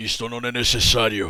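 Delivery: demon-like voice. Retelling a girl answering the priest, demonic Satan voice. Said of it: "voz de Satanás".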